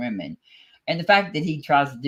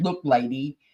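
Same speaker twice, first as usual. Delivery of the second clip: ordinary talk, nothing marked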